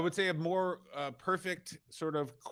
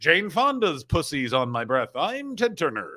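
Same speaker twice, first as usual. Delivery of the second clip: put-on spot-on, heavy Georgia accent; 4 dB louder than usual. Showing off an impression with a Georgia accent: Ted Turner Georgia accent. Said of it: "this is a perfect Georgia accent for Ted Turner".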